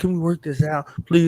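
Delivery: pleading, begging tone. Retelling asking the guests to come on: imitating own begging. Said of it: "I was begging and pleading".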